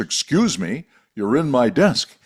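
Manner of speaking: mock big, booming, resounding call-out. Retelling telling a man sitting at the speaker's desk to move: big booming voice. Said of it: "I said in my big booming voice".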